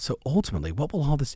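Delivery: little FM radio disc jockey voice. Demonstrating a question to ask every prospect, FM DJ voice. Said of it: "notice a little F M D J voice".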